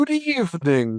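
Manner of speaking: put-on posh, upper-class English accent. Retelling a fellow voice actor's greeting that made the speaker laugh, posh English accent. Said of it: "he just started doing like a posh English accent".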